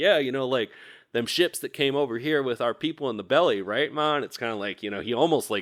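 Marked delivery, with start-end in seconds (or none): 0.0-4.2 chummy, jokey ribbing in a high jocular tone. Retelling what a man said to Ma while elbowing her: imitating a jocular tone. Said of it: "like this jocular tone".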